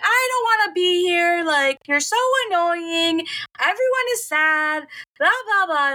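high-pitched yelling, way up top. Retelling a holiday argument with mom: imitating own past yelling. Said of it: "And then me yelling".

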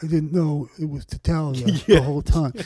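put-on old-school mafia boss voice. Joking about a Godfather scene: Marlon Brando Godfather voice. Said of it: "my Marlon Brando doing the Godfather impression".

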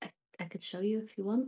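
hushed, secretive, conspiratorial tone. Retelling what one of them answered when asked where the limbs came from; retelling a conspiratorial offer. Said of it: "looks around conspiratorially and says".

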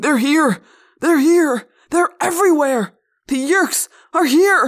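wild, frantic crying out, loud and high. Reading a story aloud, a staggering man warns passersby: crying out wildly. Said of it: "he cried, looking around wildly".

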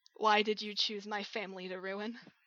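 soft, quiet, hushed voice. Narrator retells a scene, voicing her question to him, quietly asking. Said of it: "she just kind of quietly asks".

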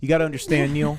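solemn, grave, dead-serious voice. Retelling what Alan said during the night: imitating Alan, mock very serious. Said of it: "He got very serious".

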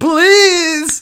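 put-on pleading, high and loud. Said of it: "As if I'm begging".

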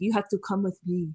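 put-on American accent with Middle Eastern tinge. Retelling how she spoke to refugees on the street: imitating a weird Middle Eastern American accent. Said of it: "weird, like, Middle Eastern American accent".

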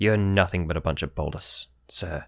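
menacing, low, quiet, threatening tone. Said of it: "It was very threatening".

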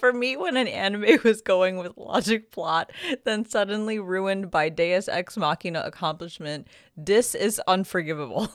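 words fighting past helpless giggles and laughter. Reading a reviewer's comment aloud, struggling through laughter. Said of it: "I'm literally tearing up right now".

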